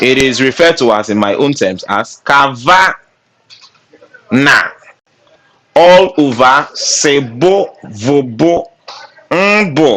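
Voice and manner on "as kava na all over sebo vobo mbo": put-on, very slow, playful Nigerian accent. Teaching a way to remember a formula, playful nigerian accent. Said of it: "I'm just trying to put in that Nigerian vibe there".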